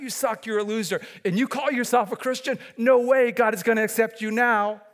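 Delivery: high-pitched sneer. A speaker contrasts the Spirit's voice with Satan's, voicing Satan's voice. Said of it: "That's Satan's voice".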